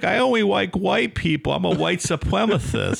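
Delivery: very high, creaky cartoon voice. Mimicking a guy whose son ran Elohim City, in an Elmer Fudd voice. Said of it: "It is straight Elmer Fudd".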